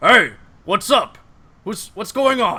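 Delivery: gruff dwarf voice. Voicing the dwarf answering from inside, gruff dwarf voice. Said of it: "you hear a gruff voice".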